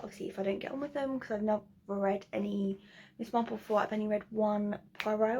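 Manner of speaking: very fast, rushed, rattled-off chatter. Talking through your reading list, feeling rushed: talking really fast. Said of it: "I'm talking really, really fast".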